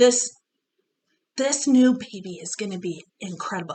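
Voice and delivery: quiet half-whispered delivery. Telling another speaker about a new baby not meant to be discussed: half-whispering. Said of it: "And I whisper".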